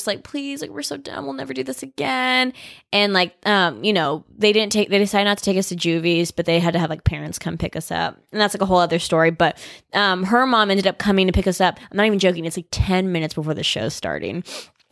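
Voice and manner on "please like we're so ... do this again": high, soft, tearful, pleading voice. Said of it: "like, just, like, crying".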